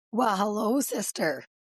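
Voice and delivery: voice nearly gone, almost lost. Greeting her sister at the start of their show, with a lost voice. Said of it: "listen to you, sis".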